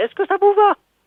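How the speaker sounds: high put-on woman's voice.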